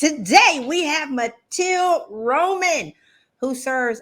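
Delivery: big, loud, high-pitched shouting. A host introducing today's guest on her show, yelling. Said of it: "I am yelling Matilde".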